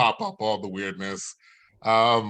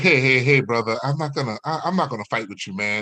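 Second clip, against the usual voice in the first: put-on tough street thug voice; 2 semitones higher than usual. Retelling talking to a woman's boyfriend on her phone, in a put-on thug voice. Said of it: "I put on my thug voice".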